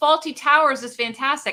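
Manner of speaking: ordinary talk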